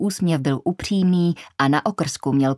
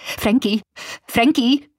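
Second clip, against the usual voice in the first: high-pitched shout into a microphone; 7 semitones higher than usual. Reading Karla calling Frankie into the microphone after a gunshot: shouting into the mic. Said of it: "Křičela do mikrofonu".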